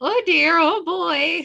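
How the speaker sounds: put-on high Canadian accent, customer-service voice. Talking about sounding Canadian, acting out their own customer service voice: Canadian customer service voice. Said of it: "I get really Canadian when I put on my customer service voice".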